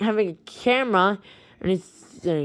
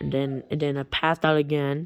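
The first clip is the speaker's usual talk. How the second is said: usual speaking voice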